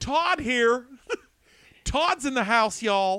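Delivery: very high, loud, cheesy, corny dad hype shout.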